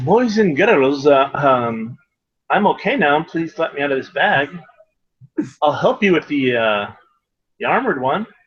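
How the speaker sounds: calling out very sweetly. Speaker voices Dogboy calling out from inside a bag, sweetest voice. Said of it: "call out in the sweetest voice that he can".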